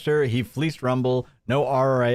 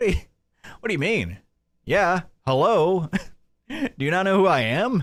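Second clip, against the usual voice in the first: put-on drunk voice, pitched higher; 6 semitones higher than usual. Imitating the drunk streamer after saying he's drunk: imitating drunk Jeremy. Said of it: "He's like".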